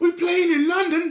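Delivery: high, loud, fake London accent.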